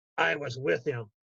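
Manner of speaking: confiding, secret-sharing tone. Retelling a veteran's reply to the narrator: retelling a hushed reply. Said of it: "replied in that same hushed tone".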